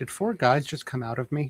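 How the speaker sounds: small, light, high-pitched understated wondering. Voicing a character in a quiet elevator ride: very quiet voice. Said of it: "Deacon just very quietly goes".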